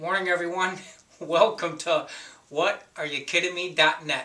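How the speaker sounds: speech broken up by giggling. Opening the show by greeting everyone, giggling. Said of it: "Sorry for giggling".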